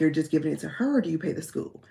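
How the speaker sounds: whispered delivery. Retelling a conversation held while people were in the house; whispering as in the story. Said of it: "I'm whispering like I'm telling the story".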